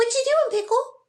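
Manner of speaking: high-pitched squawky parrot voice. Telling how her parrots copied her voice, she quotes them: imitating parrots copying her voice. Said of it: "copied my voice".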